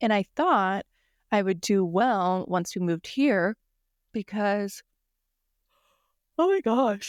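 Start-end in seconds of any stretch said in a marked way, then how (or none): 6.4-7.1 pitched-up words spoken through a yawn. Talking about struggling with houseplants at home, yawning. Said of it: "I'm yawning so much".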